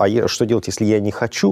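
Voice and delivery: ordinary delivery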